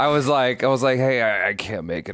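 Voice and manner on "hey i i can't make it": put-on raspy sick voice. Retelling calling a manager to skip work: imitating own fake sick voice. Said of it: "I was putting on the voice and everything".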